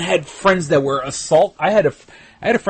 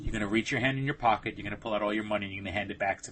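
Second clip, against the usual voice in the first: very low, very quiet, hushed under-the-breath mutter; 8 semitones lower, 14 dB quieter than usual. Recounting a crowded mugging, the robber speaks to the speaker's friend: retelling his low voice. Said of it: "spoke in a low voice and said".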